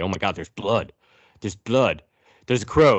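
mock heavy breathing, panting. Retelling a scene where she finds blood: imitating heavy breathing. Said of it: "Now she's breathing heavy".

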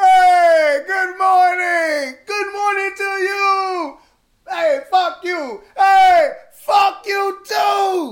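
loud put-on voice, very high, with stretched you. Greeting the audience on the show, doing a Coming to America impression. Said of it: "That's my Coming to America impression".

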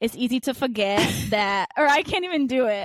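put-on old New Yorker accent. Speaker imitates the other speaker, who sounded like an old New Yorker; old New Yorker accent. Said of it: "you sounded like a New Yorker old man".

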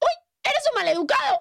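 put-on very high, childlike small-girl voice. Retelling her reply to a man who stepped on her bad arm; little girl voice. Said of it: "te salió con voz de niña pequeña".

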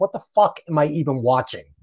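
plain

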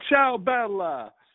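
exuberant, high, enthusiastic yelled voice. Describing a man calling out to passing girls, imitating yelling out. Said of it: "he's yelling out".

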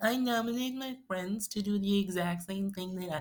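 shrill, very high fake American accent. Mocking friends' nomination posts on Instagram: mocking American accent. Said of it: "Why is all your nominations in American accent?".

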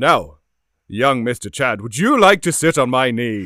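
loud, booming Christmas voice. Asked to do the Santa voice for the group, addressing Mr. Chad in Santa voice. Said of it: "can you do your Santa voice for us?".

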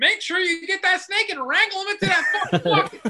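put-on rural Texas accent, very high-pitched and very loud. Retelling how Jarrett talks about getting a snake into a bucket, in Jarrett's redneck Texas dude voice. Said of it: "reverts to straight on fucking redneck fucking Texas dude".

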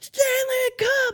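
piercing, very high, shrill screaming. Retelling how someone suddenly started screaming at him: imitating someone screaming. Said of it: "he just starts screaming at me".

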